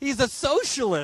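sarcastic news-anchor voice. Mimicking how news anchors say the word socialist: imitating CNN saying "socialist". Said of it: "when they say the word socialist".

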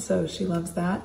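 ordinary talk

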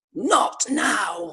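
mildly screechy voice. Retelling how a child screeched at others who came on too early: retelling a child's screech. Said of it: "screeches at them".

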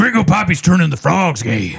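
hard-hitting, aggressive, high-pitched delivery. Trying the line after being urged: aggressive Alex Jones impersonation. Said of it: "yours is a little more aggressive".

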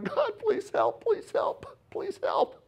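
breathy, whispered, sobbing voice. Acting out a worn-out believer at the Red Sea: imitating sobbing prayer. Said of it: "All you're doing is sobbing and going".

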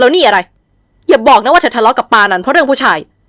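sneering, scornful, high, blurted out. The group's head blurts a question at a subordinate: blurted, scornful tone. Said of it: "วิไลโพล่งถามด้วยน้ำเสียงดูแคลน".

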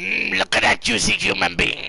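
rasping, creaky, high-pitched alien creature voice. Joking about how a phrase sounds, the speaker does an alien voice. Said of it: "I sound like an alien going".

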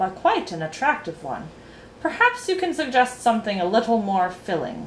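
ordinary delivery, nothing marked

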